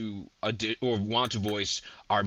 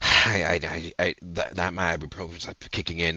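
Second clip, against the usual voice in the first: put-on reluctant man voice, lower; 4 semitones lower than usual. Acting out a cameraman in an animated project: reluctant cameraman voice. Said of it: "a reluctant, like, guy's like".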